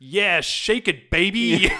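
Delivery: slow, loud, drawn-out jeering shout. Retelling a movie scene where a heckler yells at her: imitating a heckler yelling. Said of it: "This guy just yells at her".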